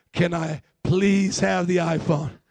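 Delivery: earnest, pleading, begging tone. Acting out a skit, asking a volunteer for the phone: begging. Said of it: "I am begging you".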